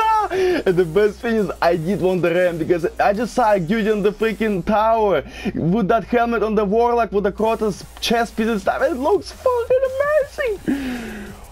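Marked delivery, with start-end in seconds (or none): 8.8-11.3 ecstatic, very high, slow, stretched-out joyful scream. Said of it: "I'm sorry, guys, for screaming".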